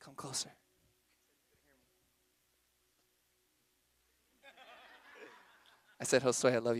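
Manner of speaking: close, intimate half-whisper, very quiet, soft, low. Speaker half-whispers to his boy standing far away; half-whispering. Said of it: "So when I whisper".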